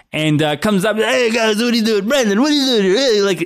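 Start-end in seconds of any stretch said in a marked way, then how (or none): 0.9-2.9 pitched-up Italian guy voice. Retelling how an older guy in a tracksuit greeted them: imitating an italian guy. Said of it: "it's so Italian".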